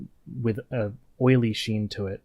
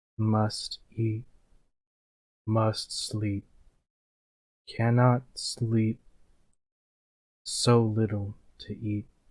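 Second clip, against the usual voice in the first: deep, echoing, resonant, reverberating voice. Narrating a voice the player hears in their head, deep, reverberating voice. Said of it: "you hear a deep, reverberating voice".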